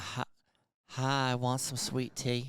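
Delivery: woman's voice with a Charleston accent. Asked if they've been working on their Charleston accent, speaker tries a woman's accent. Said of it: "That's a woman's accent".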